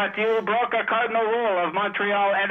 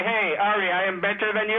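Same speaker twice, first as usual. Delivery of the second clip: ordinary talk, nothing marked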